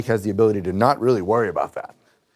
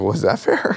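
ordinary talk, nothing marked

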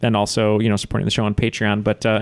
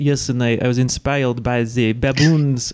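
put-on French accent; 2 semitones higher than usual. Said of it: "let's just pretend he's French".

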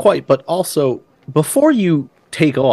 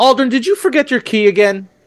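high female voice calling out. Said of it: "you just hear".

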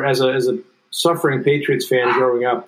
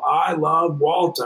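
put-on broadcaster-style yell, higher pitch; 3 semitones higher than usual. Telling how Tommy would yell out for a hustling bench player he loved, imitating Tommy yelling. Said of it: "So he would yell out".

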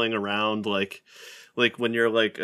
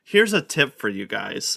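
mock-condescending tone, pitched higher; 2 semitones higher than usual. Retelling how a man gave them a tip: mocking a condescending tone. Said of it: "in an even more condescending way".

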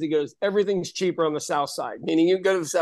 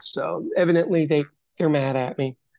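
ordinary delivery

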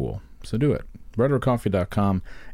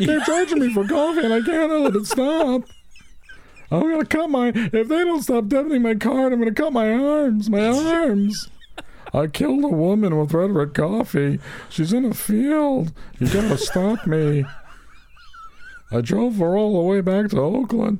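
very high, weepy killer voice; 14 semitones higher than usual. After telling a fellow performer they sounded like the weepy voice killer, the speaker does the weepy killer voice. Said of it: "You sounded like the weepy voice killer".

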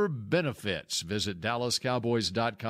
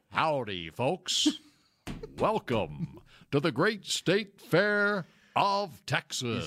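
slow, drawn-out fair announcer voice; 4 semitones higher than usual. Offering to voice the State Fair for free, in the Big Tex voice. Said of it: "what Bill Jones just voiced over for Big Tex".

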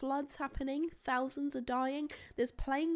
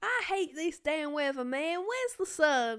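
put-on country Southern American accent; 5 dB louder than usual. Role-playing an interview about living in england, in a southern american accent. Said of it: "go southern".

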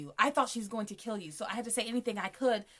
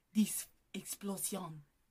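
put-on French accent, quieter; 2 semitones lower, 6 dB quieter than usual. Quoting the hitman with his bomb at episode end: imitating hitman in french accent. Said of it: "Nice French accent".

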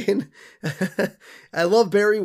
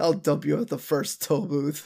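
mock mutter under the breath; 3 semitones lower, 5 dB quieter than usual. Retelling a character's remark from a book's ending, imitating someone muttering. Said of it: "under his breath".

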